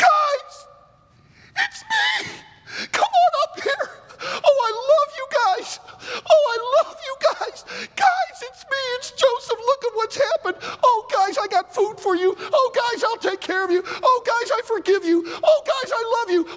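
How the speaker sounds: pretend crying, pleading tone. Acting out Joseph revealing himself to his brothers: mock emotional crying. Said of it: "He starts crying emotionally".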